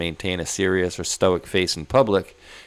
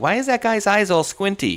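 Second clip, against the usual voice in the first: put-on loud, very high, blurted child's voice; 13 semitones higher, 3 dB louder than usual. Retelling a comedian's story of his child's remark: imitating a kid saying it loud. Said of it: "said it loud".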